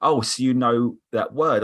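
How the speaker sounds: ordinary talk, nothing marked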